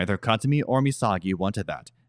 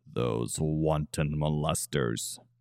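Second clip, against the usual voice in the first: low mutter under the breath, quieter and slower; 4 semitones lower, 5 dB quieter than usual. Katsumi reacts to the girl's question: muttered under his breath. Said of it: "muttered under his breath".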